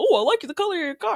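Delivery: silly goofball voice, very high. Retelling what Zach said to a lady about her car, goofy voice imitating Zach. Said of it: "I gave you the goofy voice again".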